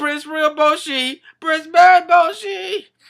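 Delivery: desperate, high, loud repeated cry.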